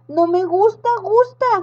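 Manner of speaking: high protesting complaint, last word echoed. A witch, ordered by a girl to climb the slide, protesting. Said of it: "protestó la bruja".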